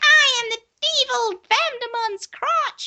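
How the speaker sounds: very high, slow, squeaky creature voice. Describing a crotch vampire showing up in a show, in a really high-pitched voice. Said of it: "has a really high pitched voice".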